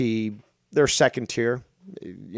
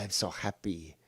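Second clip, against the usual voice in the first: very soft, hushed, put-on Latin American accent; 3 semitones lower, 12 dB quieter than usual.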